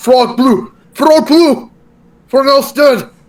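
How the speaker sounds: high, shouted yell in character voice. Playing a character fallen prone on the floor: yelling in character. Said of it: "now I'm just yelling".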